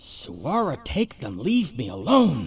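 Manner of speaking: out of breath, gasping for air. A game narrator voices a voice heard from the north, out of breath. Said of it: "a voice that sounds out of breath".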